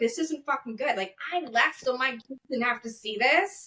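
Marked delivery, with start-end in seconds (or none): none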